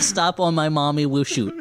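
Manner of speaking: put-on swooping, babyish toddler voice. Joking about a movie prequel title, said in a baby voice. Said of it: "It's in a baby voice".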